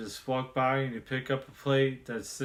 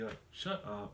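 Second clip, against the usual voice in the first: nonchalant, casual mutter, much quieter and lower; 4 semitones lower, 11 dB quieter than usual. Showing how they said it to her, the speaker repeats it nonchalantly under their breath. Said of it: "I just kind of like said it like nonchalantly".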